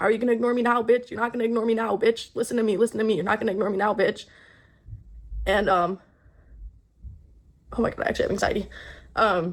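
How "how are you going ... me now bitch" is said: put-on yelling, barked out but mild. Retelling a partner yelling while on top of the bed: imitating someone yelling. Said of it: "keeps yelling at me".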